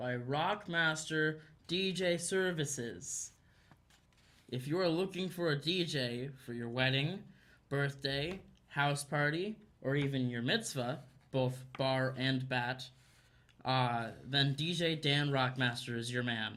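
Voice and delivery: slow, deliberate, every word carefully articulated. Reading the ad aloud again after being asked: slow, enunciated reading. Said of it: "Read that again, slowly, and enunciate".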